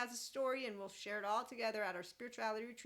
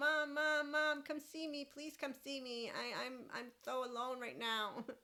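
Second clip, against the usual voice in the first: put-on clingy, needy, pleading toddler voice; 3 semitones higher than usual. Pretending to be a three-year-old calling for attention: imitating a needy three-year-old. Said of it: "I'm a three-year-old".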